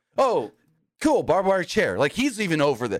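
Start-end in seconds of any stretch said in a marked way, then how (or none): 0.2-2.0 casual, unbothered, offhand, nonchalant delivery. Retelling a wrestling commentator's remark: imitating a nonchalant remark. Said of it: "he says it all nonchalantly".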